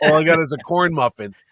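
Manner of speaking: ordinary talk, nothing marked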